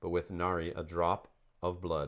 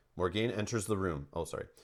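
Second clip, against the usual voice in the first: ordinary delivery, nothing marked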